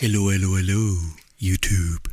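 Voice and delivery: fake seductive voice, very deep and low. Greeting youtube viewers at the start: put-on sexy voice. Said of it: "Sexy voice, huh?".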